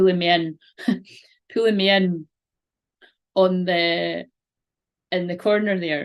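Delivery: giggling, talking through laughter. Describing a symbol on a card while laughing while talking. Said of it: "I'm just laughing".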